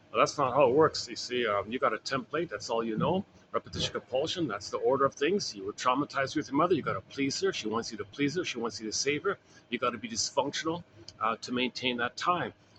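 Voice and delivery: ordinary talk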